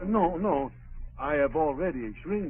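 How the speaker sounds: put-on French accent. A cleaner on the phone with a customer, Pierre's French accent. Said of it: "Pretend to be Pierre, the French cleaner".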